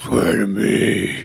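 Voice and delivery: put-on hoarse, croaky, strained voice. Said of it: "laryngitis voice".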